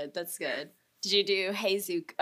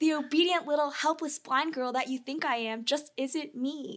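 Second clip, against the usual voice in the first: put-on high-pitched little girl voice; 7 semitones higher, 3 dB quieter than usual. Saying Toph's line from the episode aloud, Toph little girl voice. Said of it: "she had just like a little girl voice".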